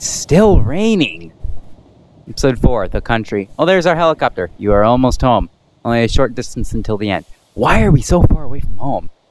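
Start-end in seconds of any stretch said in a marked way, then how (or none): none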